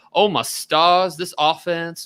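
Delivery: slow, put-on Southern gentleman drawl. Watching a game at halftime, mocking the offense: Southern gentleman accent. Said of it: "like a Southern gentleman Subs on his porch".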